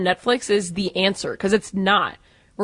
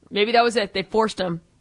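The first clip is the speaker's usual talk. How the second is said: normal talking voice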